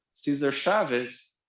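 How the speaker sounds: Brazilian accent and pronunciation. Introducing a labor activist's name in a lecture: Brazilian accent. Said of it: "the Brazilian accent".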